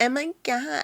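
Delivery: put-on high-pitched, cutesy baby-talk voice. Apologizing to Lo, then mimicking how she talks: Lo's baby voice. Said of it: "She does this like baby voice".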